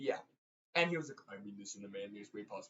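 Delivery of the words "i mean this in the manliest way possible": very low, very soft, deep bass voice. Retelling what Jason said at a birthday dinner: imitating Jason's deep bass voice. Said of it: "He has a deep bass voice".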